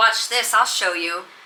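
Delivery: plain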